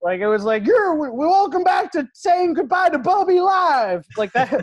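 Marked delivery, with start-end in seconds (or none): 0.6-4.0 very high, loud radio-host DJ patter. Describing a goodbye to the speaker's grandmother run like a radio show: Z Morning Zoo radio voice. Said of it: "like if the Z Morning Zoo was in charge".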